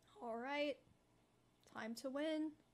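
flat, dead-level, unenthusiastic delivery with zero excitement. Announcing to the team it is time to win: unenthusiastic. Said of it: "That was the least enthusiastic".

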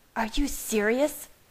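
furious, angry snarl. Reading a character's retort to Bella, in a furious snarl. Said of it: "She snarled".

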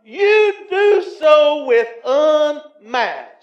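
slow, loud, preacher-style shout building up.

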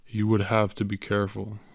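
ordinary talk

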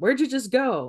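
really snotty, snide tone. Showing clinicians how not to check in with someone: snotty tone. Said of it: "in a really snotty way".

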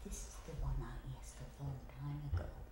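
fast, hushed whisper. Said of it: "Why are you whispering?".

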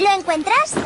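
put-on very high, childlike little-girl voice.

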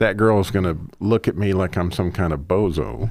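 ordinary delivery

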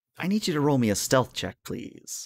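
soft, half-whispered private aside. Voicing the game master who asks a player for a stealth check: whispering in your ear. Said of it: "the game master sort of whispers in your ear".

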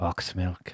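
close, quiet whisper. Playing a character who leans in close to the psyker: whispering. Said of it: "lean in close and whisper in his ear".

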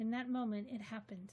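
plain reading voice

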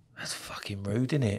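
unvoiced, low whisper under the breath.

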